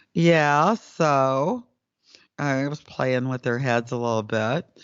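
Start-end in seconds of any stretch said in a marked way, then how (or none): 0.2-1.7 put-on sarcastic tone, "so" drawn out. Retelling a telepathic exchange, the speaker repeats his own answer, retelling a sarcastic reply. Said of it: "And I said sarcastically".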